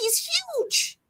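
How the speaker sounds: high, astonished exclamation. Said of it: "This is what I'm like".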